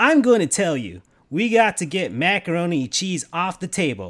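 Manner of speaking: cartoon video-game hedgehog character voice. Putting on a voice instead of answering the question: Sonic the Hedgehog voice. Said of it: "I'm gonna put my Sonic the Hedgehog".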